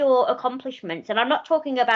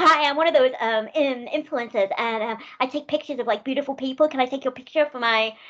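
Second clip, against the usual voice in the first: put-on American influencer accent. Retelling what a stranger who stopped the speaker said, in an American accent. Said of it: "I don't know why I'm doing an American accent".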